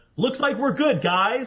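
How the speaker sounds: proud, loud, high-pitched delivery. A player in character turns around to the group while sneaking: loud proclamation. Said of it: "I turn around and I go".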